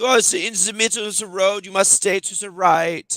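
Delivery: put-on, hounding, angry voice in Danish accent. Retelling a woman on a four-lane road scolding the speaker; retelling a yell in Danish accent. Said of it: "she was yelling at me in you know it's a Danish accent".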